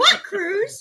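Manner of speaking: puzzled, unsure rising pitch on cruise. Retelling how the travel agent might answer: imitating a questioning rise. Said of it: "with a question at the end".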